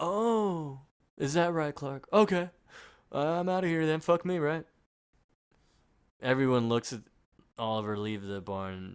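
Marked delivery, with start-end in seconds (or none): 0.0-4.6 pitched up high, long drawn-out oh. Acting out a scene from the show as Oliver: imitating Oliver. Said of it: "He's like".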